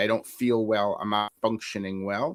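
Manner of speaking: normal talking voice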